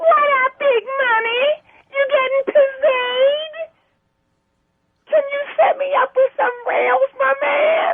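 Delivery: very high ferret voice. Asked what his pet ferret sounds like, the speaker does Pippin the ferret voice. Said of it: "I'm actually doing his voice".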